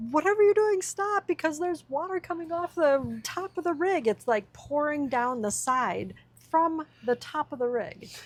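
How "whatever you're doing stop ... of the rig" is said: put-on, pitched-up screaming. Retelling a warning shouted from the other side of the rig: imitating own screaming. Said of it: "started screaming".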